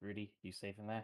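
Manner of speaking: whispered, in character voice. Voicing a character checking on an ally: whispering in character. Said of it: "he comes over here and whispers".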